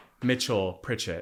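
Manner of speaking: usual speaking voice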